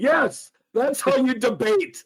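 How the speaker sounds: full-on, high, shrill yelled scream. Retelling a movie scene's ending line: imitating Frank screaming. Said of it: "Frank finishes up by screaming".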